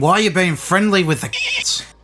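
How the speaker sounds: high yell, pitch swooping and swinging wide. Player in a game calling out to a character; yelling. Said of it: "I yell out to him".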